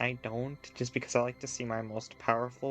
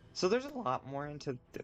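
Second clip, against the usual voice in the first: voice breaking partway through, cracking mid-phrase; 2 semitones higher than usual. Speaker thinking aloud mid-explanation, voice cracking. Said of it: "oh my voice ignore that voice crack there".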